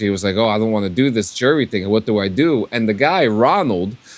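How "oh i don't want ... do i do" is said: put-on nervous, worried voice, lower. Retelling how a nervous participant reacted to jury duty: imitating a nervous man. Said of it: "this guy was nervous".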